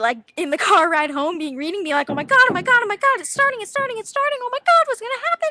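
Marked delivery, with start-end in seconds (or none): 2.1-5.5 very high, rapid, gushing, over-excited babble. Retelling reading a new Harry Potter book on the car ride home, imitating excited past self. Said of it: "And I'd be so excited".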